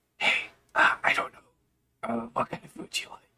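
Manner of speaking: hushed, breathy whisper under the breath. Answering a mysterious voice in character, whispering back. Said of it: "I start whispering back".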